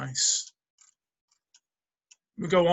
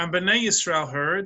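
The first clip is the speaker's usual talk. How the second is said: plain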